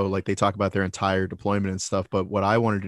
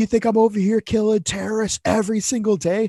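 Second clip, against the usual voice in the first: put-on scream, higher and louder; 13 semitones higher, 4 dB louder than usual. Retelling a soldier on the phone to his wife: imitating someone screaming. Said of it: "just screaming at his wife".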